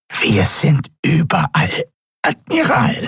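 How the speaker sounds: high, squeezed, pressed, nasal croaking voice. Narrating a story, giving the Draxyl's reply to the Admiral: Draxyl's croaking, pressed, nasal voice. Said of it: "krächzte die gepresste, nasale Stimme des Draxyl".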